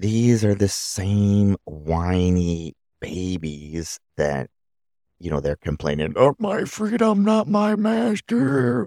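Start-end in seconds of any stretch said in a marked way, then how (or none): 6.1-8.9 put-on old man voice. Doing the speaker's best attempt at a put-on old man voice. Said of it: "That's my best old man voice".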